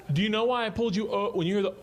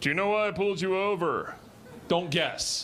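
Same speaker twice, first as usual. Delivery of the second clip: cool-guy cop voice, playing it cool. Acting out a cop walking up to a driver's car, imitating a cool-guy cop. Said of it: "like, cool guy".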